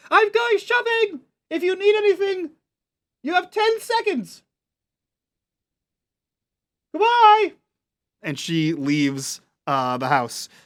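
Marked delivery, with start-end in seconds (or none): 0.1-7.5 high-pitched shouted call. Voicing a character leaving the house: shouting up the stairs. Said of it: "she sort of shouts back up the stairs".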